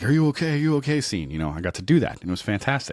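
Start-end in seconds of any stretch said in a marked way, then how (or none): 0.0-1.0 high, loud, worried, anxious calling out. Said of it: "Everybody's like".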